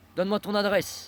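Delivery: mock-threatening delivery. Telling of trouble with some guys, the speaker quotes a man's demand, retelling a menacing tone. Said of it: "il m'a dit ça sur un ton menaçant".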